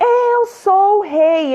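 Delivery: very slow, high, drawn-out desperate yell, acted. Retelling a scene about the young king, imitating Joffrey's desperate shout. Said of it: "Ele começa a gritar, desesperado".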